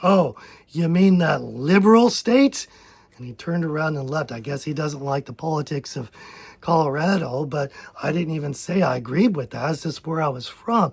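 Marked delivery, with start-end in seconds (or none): 0.0-2.7 mock venom-laced, scornful, spiteful tone. Retelling an older man's greeting at a church: imitating a venomous remark. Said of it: "with real venom in his voice".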